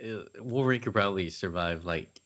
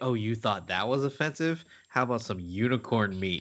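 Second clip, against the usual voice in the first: mocking, taunting, daring tone; 3 semitones higher than usual. Acting out Saturnine offering unicorn meat: imitating Saturnine's taunt. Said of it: "and Saturnine is like".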